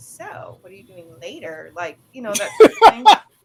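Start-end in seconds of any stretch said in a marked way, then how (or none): 0.0-1.7 very hushed, drawn-out, clumsy, bad flirty voice. Showing how an overly flirtatious person talks: bad impression of flirting. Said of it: "that was a bad impression".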